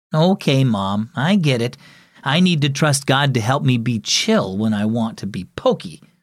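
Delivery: ordinary delivery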